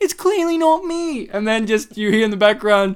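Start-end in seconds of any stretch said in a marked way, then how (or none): 0.0-1.3 very high, odd, weird voice lacking authority. Retelling a character's line from a videotape: imitating a character's weird voice. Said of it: "with this weird voice going".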